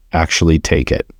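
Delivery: plain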